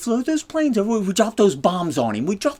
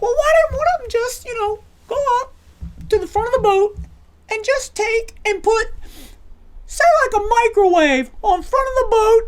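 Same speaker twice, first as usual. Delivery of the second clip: put-on very high-pitched child voice, rising tune; 14 semitones higher, 3 dB louder than usual. Retelling a student's question in class: imitating Jamie's high-pitched voice. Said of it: "going high-pitched with his voice whenever he asked questions".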